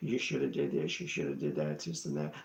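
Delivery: very low, calm, deep, hushed scolding. Retelling someone sitting up in bed at night: imitating calm, low-voiced scolding. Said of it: "just very calmly starts scolding me".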